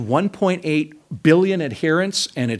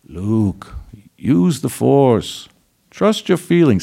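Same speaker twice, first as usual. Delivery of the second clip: rough, badly done put-on mentor voice; 3 semitones lower, 4 dB louder than usual. Retelling Luke's run on the Death Star, the speaker does a bad Obi-Wan imitation. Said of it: "That's a really bad imitation of Obi-Wan".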